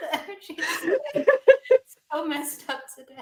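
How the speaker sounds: very loud, high speech, cracking up laughing. Remarking on the energy today: laughing while talking. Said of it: "I'm just cracking up".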